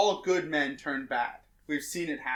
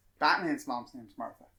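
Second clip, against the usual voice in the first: usual speaking voice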